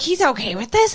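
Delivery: startled, alarmed, upset disbelief, freaking out. Retelling a scene where a woman learns the news: imitating someone freaking out. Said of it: "she just starts freaking out".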